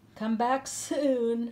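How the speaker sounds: laughing, "soon" drawn out. Narrator reading Matisse's words to Monique as she heads home, laughing. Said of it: "laughed Matisse".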